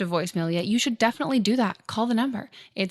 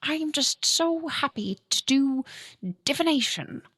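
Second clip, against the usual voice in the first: American voice putting on a fake British accent; 4 semitones higher than usual. Asked about their accent, the speaker does an American's fake British accent. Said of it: "if like they cast an American who's like".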